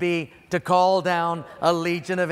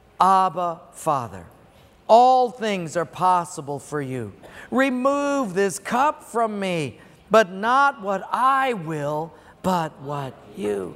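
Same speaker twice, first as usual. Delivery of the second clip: slow, loud, passionate, prayer-like delivery. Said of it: "Can you hear the passion in his voice?".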